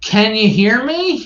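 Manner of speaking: very high, drawn-out screaming. Retelling Ed testing Zoom settings on the phone: imitating someone screaming. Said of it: "screaming into the phone".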